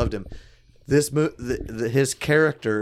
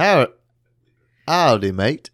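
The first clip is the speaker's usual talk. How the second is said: loud, stumbling, clumsy, bad attempt at British English accent; 6 dB louder than usual. Joking with the others about British listeners: bad attempt at a British accent. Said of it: "I'm not good at accents".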